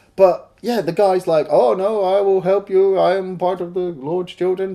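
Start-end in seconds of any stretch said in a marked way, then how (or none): 1.5-4.8 worst possible put-on Swedish accent. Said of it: "the worst Swedish accent".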